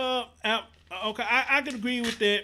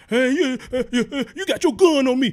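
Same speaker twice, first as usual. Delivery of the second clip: acted tough hostile outburst, louder; 2 semitones higher, 7 dB louder than usual. Imitating a driver talking stupid to police: imitating someone acting tough with police. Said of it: "going from zero to one hundred".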